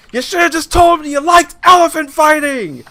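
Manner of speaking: very loud, shrill screaming outburst. Retelling a movie scene where she catches him: imitating a woman screaming. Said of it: "she's screaming at him like".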